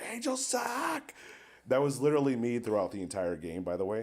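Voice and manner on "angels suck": very high shrieking scream with voice cracking. Retelling screaming at a game billboard: imitating own past screaming. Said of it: "And I was just screaming".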